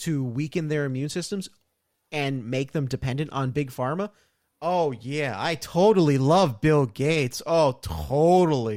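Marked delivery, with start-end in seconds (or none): 4.6-8.8 loud, very slow, sarcastic fake gushing. Reacting to a trending topic, faking agreement: sarcastic tone. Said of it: "sarcasm, by the way, people".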